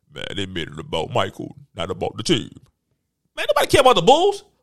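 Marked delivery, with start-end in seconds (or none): 0.2-2.5 very deep, dopey, aggrieved and mad voice. Mocking a player who complained about the documentary: mocking Scottie Pippen's voice. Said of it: "his stupid ass voice".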